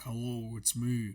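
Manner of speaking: put-on deep voice. Joking that the other host will be the speaker, in a pitched-down voice. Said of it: "with a pitched uh, down voice".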